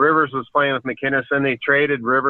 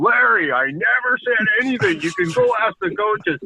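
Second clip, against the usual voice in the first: high, swooping yell; 9 semitones higher than usual. Telling how Bergie answered Larry in his office while you hid in the closet, imitating someone yelling. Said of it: "Bergie's yelling at him going".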